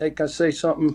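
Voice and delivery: ordinary talk, nothing marked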